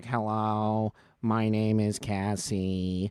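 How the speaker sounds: flat, mechanical electrolarynx voice, robotic sound. Showing how smokers talk through a device at the neck, electrolarynx robot voice. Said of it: "like the robot voice".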